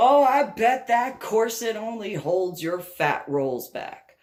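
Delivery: loud, brash, cutting, mocking taunt. Retelling a man's insult in a smoking section: imitating a loud taunt. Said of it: "goes and says loudly".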